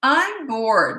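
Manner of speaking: mock snotty, bratty little kid voice, high. A parent imitating their five-year-old son, in a snotty tone. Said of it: "in that snotty tone".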